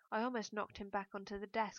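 ordinary delivery

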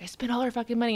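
put-on angry tone. Retelling a dad's complaint on the drive home: imitating an angry dad. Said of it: "he'd be all pissed off".

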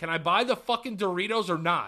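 mock fed-up, furious, sweary outburst. Retelling telling off a store clerk over a mask: retelling an angry outburst. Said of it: "I fired off on this dude".

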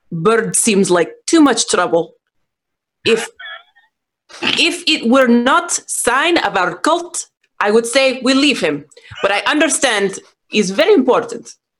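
stage whisper, loud. Leaning down to Quiver so everyone can hear: loud stage whisper. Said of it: "I whisper super loud".

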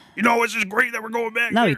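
high frog-puppet voice. Trying out an impression right after asking another speaker for one: Patrick Mahomes impression. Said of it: "He's like Kermit the Frog".

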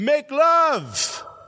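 put-on excited voice, French accent, broken English. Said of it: "the one guy goes".

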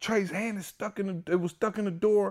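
mock, very high, frantic, panicked outburst. Retelling telling Candace about an emergency, acting out own panic. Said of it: "I'm so panicked".

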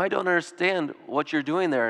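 imitated gentle tone. Speaker imagining what someone might come up and say: quoting in a gentle voice. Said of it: "in a very gentle voice".

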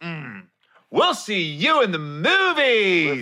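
put-on slow, snide, catty old woman voice. Retelling what an old lady said at the merch area: imitating a catty old lady. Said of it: "almost like an old bitch move".

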